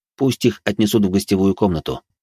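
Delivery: plain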